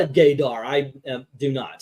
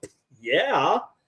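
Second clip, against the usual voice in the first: sarcastic, scoffing, dismissive delivery. Acting out an imagined reply to a harsh interviewer: imitating Aubrey Plaza's sarcastic reply. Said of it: "She would go".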